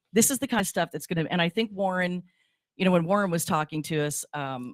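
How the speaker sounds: ordinary delivery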